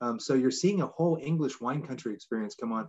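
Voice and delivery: ordinary talk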